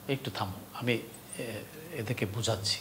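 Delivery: soft, gentle, calming delivery.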